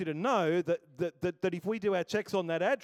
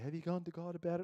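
mild, gentle, soft delivery; 9 dB quieter than usual. Retelling the wife's reply when the speaker processes things with her; imitating the wife speaking gently. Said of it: "She'll gently say".

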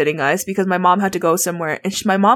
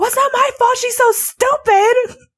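high, pissed-off, angry yelling. Retelling your pissed mom yelling at your sister, retelling a yell. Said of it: "yelling at my sister".

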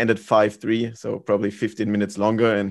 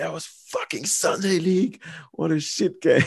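mock raging rant, much higher pitch; 7 semitones higher than usual. Retelling a player's outburst after his team almost lost, imitating someone raging. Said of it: "He was raging".

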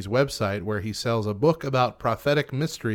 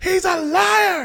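put-on scream, higher and louder. Recounting a recorded scene to a listener, acting out a woman's outburst. Imitating someone screaming. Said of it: "you could hear her start screaming".

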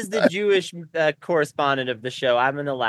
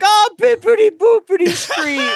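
very high, drawn-out, put-on Italian accent; 6 dB louder than usual. Imagining reading street signs while visiting italy, in a mock italian accent. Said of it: "being like".

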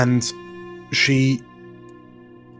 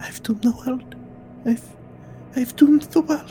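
soft whisper, much higher; 14 semitones higher, 4 dB quieter than usual. Narrator voices Millia alone in her bedroom: Millia softly whispering to herself.

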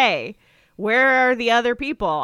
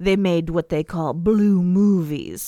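mock-sinister tone, put-on, lower pitch; 4 semitones lower than usual. Quoting a woman talking about it, in a mock-sinister tone. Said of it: "she's like talking about it very sinisterly".

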